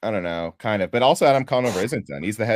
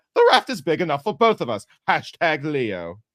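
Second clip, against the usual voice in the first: put-on British TV host voice, pitched higher; 6 semitones higher than usual. Doing an impression on the suggested word boat: John Oliver impression. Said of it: "can I do my John Oliver impression?".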